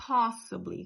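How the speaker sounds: POS in possibly hit hard, first-syllable stress. English pronunciation lesson for Portuguese speakers: stress on first syllable of possibly. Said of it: "com stress, a parte forte no O".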